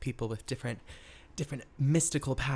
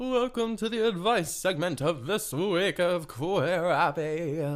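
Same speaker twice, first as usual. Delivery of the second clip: high put-on ghostly voice with a speech impediment; 5 semitones higher, 5 dB louder than usual. Welcoming listeners to the advice segment: ghost with a speech impediment voice. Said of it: "I kinda sounded like some sort of ghost with a speech impediment".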